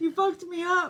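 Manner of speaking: very soft, hushed, high laughing through tears. Still shaken after a fright, telling someone what the scare did, crying and laughing. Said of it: "the way you're crying and laughing".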